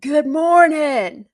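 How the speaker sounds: big, booming, very loud voice. Retelling how the man on the third floor answers a morning greeting, loud booming voice. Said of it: "in a very loud, booming voice".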